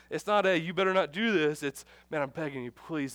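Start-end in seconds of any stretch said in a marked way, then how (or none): 1.6-3.1 put-on compassionate, pleading, begging tone, quieter. Preaching on the woes Jesus gives, acting out compassionate pleading. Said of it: "There's a compassion in his voice".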